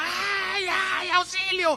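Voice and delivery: mock high-pitched, wailing woman's cry. Retelling a story of a wife being beaten: imitating a woman screaming for help. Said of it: "la señora gritaba".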